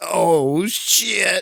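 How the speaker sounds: put-on twangy Southern accent. Retelling a film scene, quoting Julie: Julie's Southern twang. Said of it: "it has a Southern twang to it".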